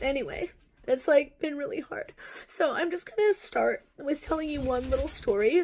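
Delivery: talking through tears. Opening up to listeners about her time in a cult; crying. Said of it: "so sorry for crying".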